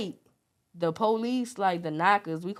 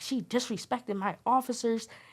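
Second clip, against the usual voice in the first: angry complaining tone, pitched up and hushed; 5 semitones higher, 5 dB quieter than usual. Recounting her court case, quoting the judge as a mock-angry judge. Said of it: "He was mad. He was like".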